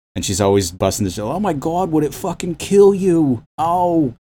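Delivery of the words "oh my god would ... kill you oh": put-on very high-pitched Bronx accent. Describing a film character played by Marisa Tomei, Marisa Tomei Bronx accent. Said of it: "she's got that Bronx accent".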